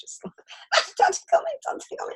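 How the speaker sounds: high-pitched, giggling, pleading while laughing.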